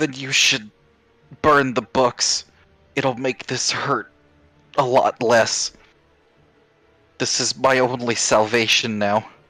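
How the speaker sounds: demonic tone with own voice still showing through. Matoa grimaces and answers, demonic Matoa voice. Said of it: "in a more demonic tone".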